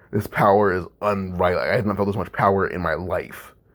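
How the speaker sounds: usual speaking voice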